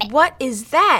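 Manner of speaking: gasped, breath caught. A mother points at the frog her daughter is holding, gasping. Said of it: "gasped her mother".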